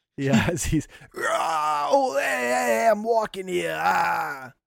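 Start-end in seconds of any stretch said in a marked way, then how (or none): 1.2-4.4 pained screaming, higher. Voicing an enemy pinned through the thigh: screaming in pain. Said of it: "Just screaming".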